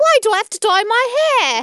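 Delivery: loud, high, terrible put-on New Jersey accent. Asked by a co-host to say it in a really bad Jersey accent. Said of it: "but like in a really bad Jersey accent".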